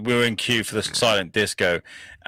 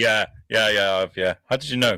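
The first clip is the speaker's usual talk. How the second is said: ordinary talk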